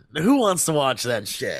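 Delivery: ordinary talk, nothing marked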